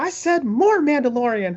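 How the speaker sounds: pitch pushed very high, cartoon-style voice. Retelling a scene where Mickey Mouse answers phone calls: Mickey Mouse voice. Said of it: "there's this one scene where Mickey Mouse is".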